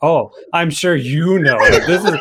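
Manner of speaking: super sarcastic, dripping with sarcasm. Retelling the true prophet's reply to the king, acting out super sarcastic tone. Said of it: "but he's like super sarcastic about it".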